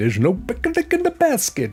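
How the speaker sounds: poor put-on cartoon bear voice, very high, swooping. Chatting to a friend about rain in Leicestershire, rubbish Yogi Bear impression. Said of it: "That was my rubbish Yogi Bear impression".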